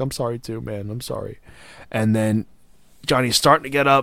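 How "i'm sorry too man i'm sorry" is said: acted weeping through the words, tearful, crying. Retelling a wrestling scene where Gargano apologizes: imitating someone crying. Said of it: "crying. He's like".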